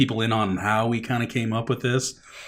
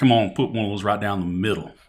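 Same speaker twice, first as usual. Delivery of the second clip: put-on old Texas American drawl; 2 semitones lower than usual. Showing a joke voice idea for a character, in an old Texas American voice. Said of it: "an old Texas American voice".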